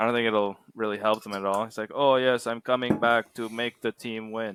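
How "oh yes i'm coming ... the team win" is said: slow, unhurried put-on Russian accent. Acting out a man coming back to the Capitals, in a put-on Russian accent. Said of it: "nice Russian accent".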